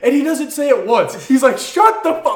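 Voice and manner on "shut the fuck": put-on high toddler scream at the top of the lungs. Retelling a toddler yelling on a landing plane: imitating a child screaming. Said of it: "Just screaming it".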